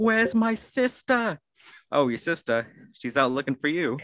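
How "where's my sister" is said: mock, very high-pitched, shrieking scream. Acting out one's own reaction in an imagined scene, retelling a scream. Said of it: "And then I just start screaming".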